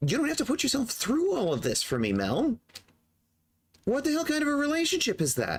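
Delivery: very high angry voice. In a drama, one character confronts mel about their relationship: raised angry voice. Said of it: "I'm sorry for raising my voice".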